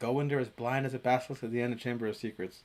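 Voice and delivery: normal talking voice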